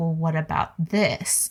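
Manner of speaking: normal talking voice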